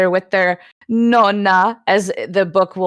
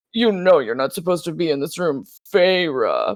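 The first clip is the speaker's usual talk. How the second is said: bad, awful, forced, deep put-on manly dude voice; 2 semitones lower than usual. Mock a woman's awful attempt at male characters, speaking to Feyre in a put-on dude voice, chin tucked into neck. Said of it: "getting her chin like really deep into her neck".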